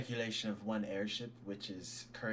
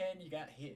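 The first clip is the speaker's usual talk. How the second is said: high, faraway-sounding call from a distance; 7 semitones higher than usual. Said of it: "just like this voice down the hall".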